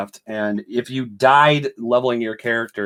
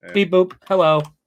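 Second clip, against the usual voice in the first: pitched-up, beeping robot machine voice; 8 semitones higher, 4 dB louder than usual. Speaker shows the guys his robot voice, robot voice. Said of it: "This is my robot voice".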